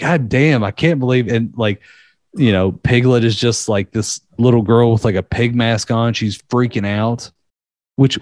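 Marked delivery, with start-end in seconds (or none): none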